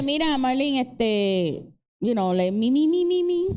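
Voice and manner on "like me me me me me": normal talking voice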